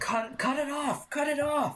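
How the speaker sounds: very high-pitched panicked yell.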